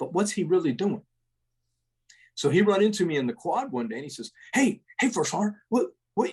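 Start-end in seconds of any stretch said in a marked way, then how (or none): 4.5-6.3 super hyper, excitable soldier voice, high. Speaker retells a guy running into him in the quad, imitating Kepler, super hyper. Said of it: "he talked just like that. He was just super hyper".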